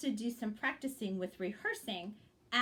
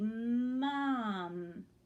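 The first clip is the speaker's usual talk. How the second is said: slow, drawn-out, smoothly scooped. Showing how to rehearse a word aloud, said slowly. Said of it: "Kind of said it slowly".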